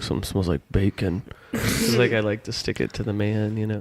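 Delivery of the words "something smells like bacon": mock muttering under breath, lower pitch. Retelling a remark once made under the breath: imitating muttering under breath. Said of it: "under my breath".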